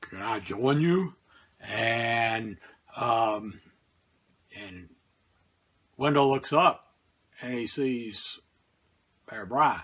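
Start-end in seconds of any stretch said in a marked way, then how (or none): 0.0-1.1 imitated gruff elderly voice. Storyteller voices a stranger at night asking to join, gruff old Bear Bryant voice. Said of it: "gruff old voice say".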